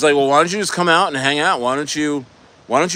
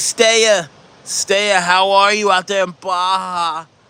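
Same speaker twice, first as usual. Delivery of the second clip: put-on high, slow old lady voice, drawn-out "Baja"; 5 semitones higher than usual.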